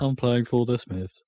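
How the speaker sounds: put-on robot voice, gloomy and flat. Joking about a musician's depressing stage name, in a gloomy Marvin the robot voice. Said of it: "I sound like Marvin from Hitchhiker's Guide".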